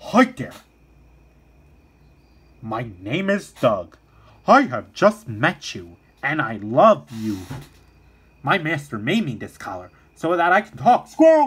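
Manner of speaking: talking dog voice, as through a collar. Describing a favorite golden retriever from Pixar's Up: Doug from Up voice. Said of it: "Doug has like a talking voice collar, and he's like".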